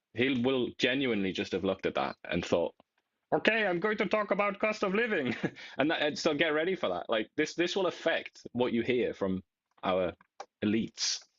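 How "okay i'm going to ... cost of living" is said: put-on pitched-up voice with Quebec French accent. Imagining a political leader's reaction, in a François-Philippe Champagne impression with Quebec accent. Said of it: "with a Quebec accent".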